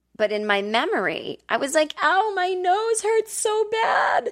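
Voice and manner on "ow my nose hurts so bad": put-on shrill, very high, slow, drawn-out baby whine. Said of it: "whining like a baby".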